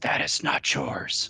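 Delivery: rough, gravelly rasp of an undead corpse. A bloated undead corpse sits upright and swims toward you, gravelly voice. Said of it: "his kind of gravelly voice says".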